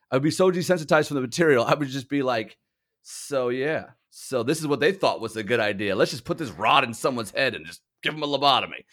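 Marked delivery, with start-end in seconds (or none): none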